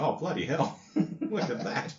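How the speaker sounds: laid-back, barely bothered Australian male voice. Acting a companion reacting to a Dalek killing: laconic unfazed Aussie bloke. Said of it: "the typical laconic Aussie bloke who isn't very fazed".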